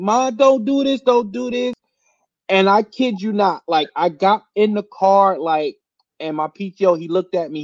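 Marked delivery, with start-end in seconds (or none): 0.0-1.7 acted, high-pitched, pleading scream. Retelling a daughter begging her mother at a scene, imitating daughter screaming. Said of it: "The daughter's like screaming like".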